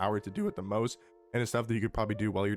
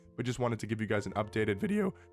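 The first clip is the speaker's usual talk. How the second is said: voice cracking and breaking. Introducing an updated video to viewers, the speaker's voice cracks. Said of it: "Fully voice crack".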